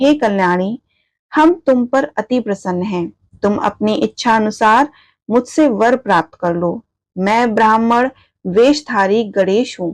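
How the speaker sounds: ordinary delivery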